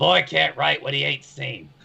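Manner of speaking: very gruff, rough, creaky, high voice. Describing how he pulls out a book and speaks, in a very gruff voice. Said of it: "he's going to say in a very gruff voice".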